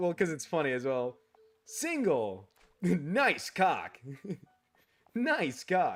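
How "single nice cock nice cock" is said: slow, swooping, sing-song game announcer voice. Recalling a baseball game's announcer lines: Wii Sports announcer voice. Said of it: "the one that I remember the most".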